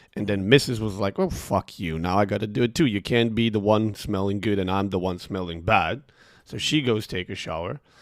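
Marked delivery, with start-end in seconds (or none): none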